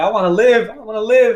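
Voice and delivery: words cried through tears, high and sobbing. Retelling being stuck on the rocks and crying: retelling own crying words. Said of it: "And I'm crying and crying and crying".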